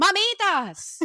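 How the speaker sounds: very loud, high, projected calling out. Retelling how someone called out between the stalls, imitating a loud call. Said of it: "her voice was so loud".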